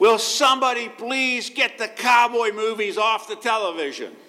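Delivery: woman's high-pitched yell, carrying far. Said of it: "a lady yelled out".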